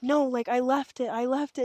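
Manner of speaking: put-on tearful child voice, crying, insistent, pleading. Retelling how a son cried to her boss over a lost item, imitating a boy crying. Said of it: "crying to my boss".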